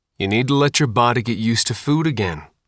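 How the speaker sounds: usual speaking voice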